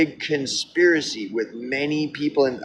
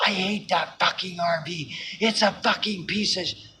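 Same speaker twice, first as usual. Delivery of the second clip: play-acted, high, furious, raging possessed demon howl; 5 semitones higher, 5 dB quieter than usual. Retelling her outburst at her dad: imitating a demonic furious yell. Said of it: "like a demon".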